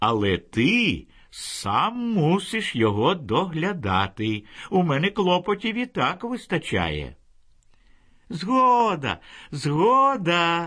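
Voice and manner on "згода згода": joyful, happy, delighted exclaiming tone. Narrator reads a boy agreeing when his mother allows the bird, joyful exclamation. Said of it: "радісно вигукнув Вітя".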